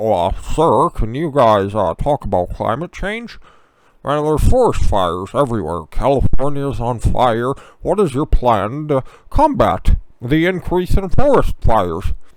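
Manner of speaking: droopy, hangdog cartoon hound voice, loud. Acting out Chris Wallace asking questions at the presidential debates, do a Droopy Dog impression. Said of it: "doing his droopy dog impression".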